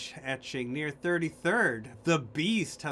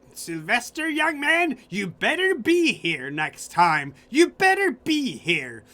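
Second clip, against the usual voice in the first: put-on loud, shrill, high-pitched old woman voice; 8 semitones higher, 9 dB louder than usual. Narrating an old lady in a wheelchair rolling toward sylvester, speaking as her in an old lady voice. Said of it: "the glowing eyes of an old lady".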